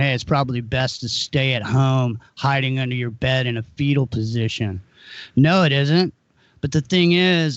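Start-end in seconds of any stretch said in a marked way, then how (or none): none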